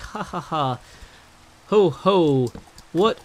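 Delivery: bad drawn-out laugh voice. Recalling the speaker's own reply to a pointed question, doing a bad Santa voice. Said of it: "that was a bad Santa voice".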